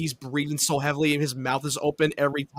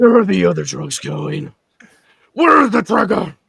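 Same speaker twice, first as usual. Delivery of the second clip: put-on gruff growling superhero voice, higher and louder; 4 semitones higher, 10 dB louder than usual. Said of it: "You sound like you had throat cancer".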